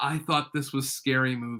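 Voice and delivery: soft, very quiet, hushed under-the-breath aside. Retelling what his wife leaned over and said during a movie, very quiet remark. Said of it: "very quietly goes".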